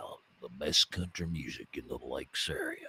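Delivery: hushed, breathy radio-announcer murmur, barely above a whisper. Pitching an AI radio line to the general manager: Sam Elliott voice. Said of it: "I can have it be Sam Elliott and going".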